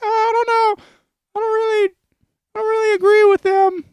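very high, little puppet voice. Imagining a neighborhood barbecue, speaking as Elmo: imitating Elmo's voice. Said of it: "and Elmo's like".

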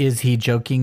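ordinary delivery

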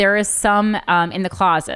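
ordinary delivery

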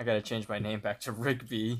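ordinary talk, nothing marked

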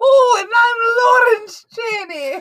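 put-on very high, clumsy Scottish accent, stretched-out I'm. Introduce yourself on the podcast as Lawrence Chaney from Drag Race UK, bad Lawrence Chaney impression. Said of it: "I cannot do a Scottish accent well at all".

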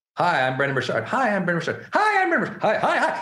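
fumbling, nervous speech restarted repeatedly, rising pitch. Recalling recording a first video: imitating nervous first-video retakes. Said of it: "you can't even pronounce your name".

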